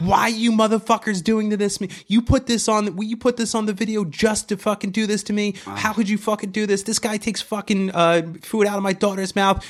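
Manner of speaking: put-on very high-pitched, unhinged screaming rant. Acting out someone down on the floor pounding it, imitating her screaming. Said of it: "Screaming like".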